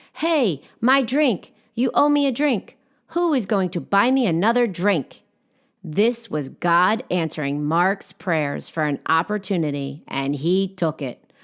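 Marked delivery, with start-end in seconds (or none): 0.2-5.3 high, acted-out shout in thick French accent. Retelling a woman's complaint about her spilled drink: yelling in a heavy french accent. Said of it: "She yelled in a heavy French accent".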